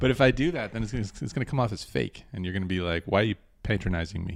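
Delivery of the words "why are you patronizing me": usual speaking voice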